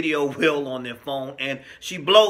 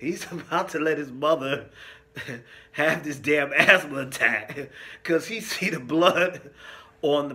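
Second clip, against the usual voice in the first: giggling, barely holding it together. Recapping a grim scene from a show: laughing while talking. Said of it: "I don't know why that's so funny to me".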